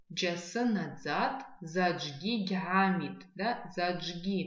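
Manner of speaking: slow, deliberate reading, word by word.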